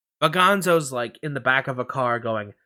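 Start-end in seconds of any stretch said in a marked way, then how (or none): none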